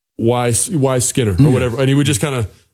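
usual speaking voice

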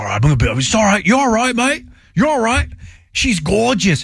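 put-on spoken with Australian accent. Retelling a nature show clip, doing Steve Irwin with an Australian accent. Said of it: "we add the Australian accent".

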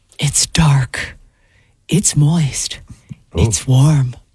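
slow, breathy delivery with drawn-out, airy words. Repeating someone's words the way they were asked, slower and breathier. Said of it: "Say that again a little slower and breathier".

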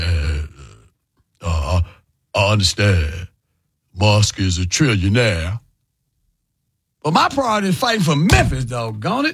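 deep radio voice, low, pitch swooping up and down. Quoting the mayor on a call-in show, imitating Paul Young's voice. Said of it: "let me say like Paul Young".

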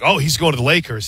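ordinary talk

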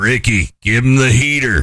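acted rough gravelly voice. Quoting the manager from Major League telling Ricky: Lou's gravelly voice. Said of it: "his gravelly voice like this".

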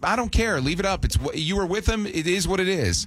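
normal talking voice

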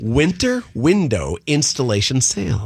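slow, careful enunciation of every word. After tripping over a phrase, reading it again, slowed down deliberately. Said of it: "I'll slow it".

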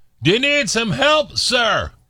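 very high, loud hailing shout. Telling a joke, voicing a boat captain offering help: yelling. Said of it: "the captain yelled".

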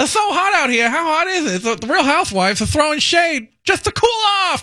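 very high-pitched late-night comedy delivery. Doing a layered impression after being asked to: Jay Leno impression. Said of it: "Leno's like".

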